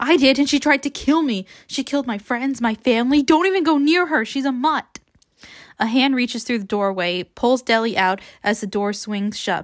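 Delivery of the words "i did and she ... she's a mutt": high-pitched, frantic, desperate urgency. Narrator reading Peeta warning Deli not to trust her, frantic voice. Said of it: "says Peeta in a frantic voice".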